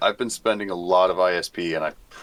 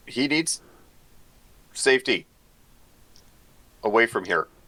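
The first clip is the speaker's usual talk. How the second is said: mock mild, high in-character voice; 5 semitones higher than usual. Playing a character sending an ally away to safety: in-character shout. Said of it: "I will shout".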